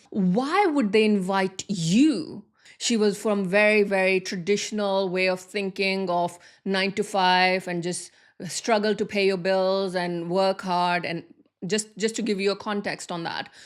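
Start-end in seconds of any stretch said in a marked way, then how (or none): 0.2-2.5 bitter, put-out, resentful, offended tone. Retelling how an offended person questioned the invitation: imitating an offended person. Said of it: "the way she said it, it was more like".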